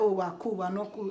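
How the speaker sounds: ordinary talk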